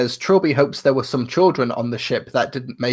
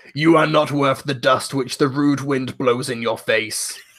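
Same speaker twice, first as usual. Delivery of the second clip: put-on deep reading voice. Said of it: "sounds like an Arnold Schwarzenegger line".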